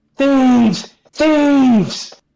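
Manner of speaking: put-on, very high, shrill, loud shout. Voicing a character who accuses the party of theft: shouting in character. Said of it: "she just starts shouting".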